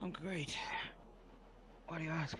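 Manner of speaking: very quiet, hushed, breathy whisper. Answering when asked whether they're alright; whispering. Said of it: "You're whispering".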